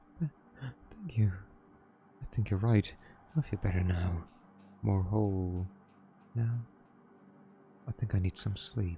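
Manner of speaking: odd quiet character voice. Playing a weirdo who has just been reassured, in a weird, slightly quieter voice. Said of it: "he deserves a weird voice that might be slightly quieter".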